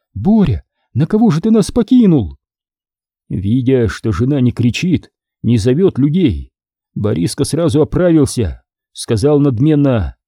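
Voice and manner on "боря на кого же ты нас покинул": barely audible, high, faint voice. A wife holding her baby daughter at the door speaks to her husband, barely audible. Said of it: "еле расслышал ее слова".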